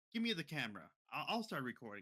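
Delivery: normal talking voice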